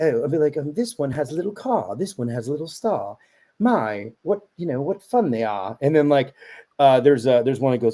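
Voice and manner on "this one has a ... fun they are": put-on British accent with sing-song storybook rhyme cadence. Showing friends how they read a children's rhyme book aloud: British accent. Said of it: "talking in British accent then".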